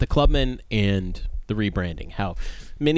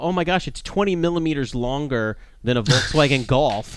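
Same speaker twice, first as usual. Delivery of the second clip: lightly sarcastic exclamation, acted out; 4 semitones higher than usual. Retelling own Facebook comment about the new Clubman, retelling a kind of sarcastic comment. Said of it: "I was kind of sarcastic in one of my comments".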